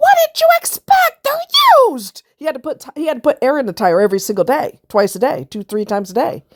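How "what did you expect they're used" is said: put-on shrill, very high, loud squealing scream. Speaker retells screaming at him during his rage, in a high squeal. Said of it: "I squealed higher voice than [name]".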